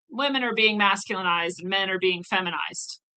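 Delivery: ordinary delivery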